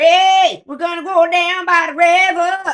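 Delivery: shrill holler, very high, very loud, slow and drawn-out. Recalling a cartoon character yelling at the Firefly: Mama Odie voice. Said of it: "Mama Odie, who's, who's yelling at the Firefly".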